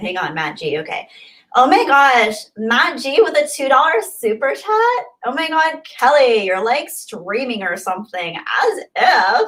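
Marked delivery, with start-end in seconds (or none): 1.6-9.5 high, swooping put-on Valley Girl accent. Reading a viewer's super chat aloud: put-on Valley Girl accent. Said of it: "let me read this in my best Valley Girl accent".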